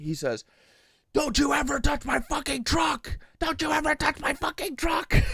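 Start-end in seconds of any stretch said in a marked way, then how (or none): 1.1-5.1 mock screaming in a very high pitch. Retelling a driver who rolls his window down: imitating someone screaming. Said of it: "he starts screaming at me".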